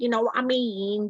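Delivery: manky, congested voice, like a blocked-up nose. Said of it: "do it in a proper manky voice".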